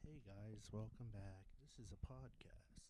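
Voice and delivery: very quiet, slow, hushed, barely audible whisper. Opening a podcast in a whisper: whispering. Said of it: "Michael's whispering for some reason".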